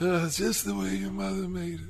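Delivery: put-on, gravelly movie-gangster voice. After being asked about an Italian accent: Marlon Brando impression. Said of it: "That was a Marlon Brando".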